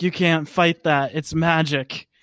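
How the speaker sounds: ordinary talk, nothing marked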